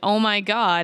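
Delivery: put-on frantic, panicked, freaked-out cry of alarm. Retelling a scene where the sister panics: imitating someone freaking out. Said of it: "So she's freaking out".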